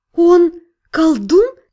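exhaled, breathed out on the outgoing breath. Narrator reads the girl's question to Faren, breathed out. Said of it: "выдохнула девушка".

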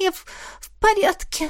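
shaky, trembling, very high small voice. A girl, asked if she is all right, answers in a trembling small voice. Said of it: "подтвердила дрожащим голоском девушка".

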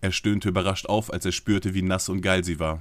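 plain

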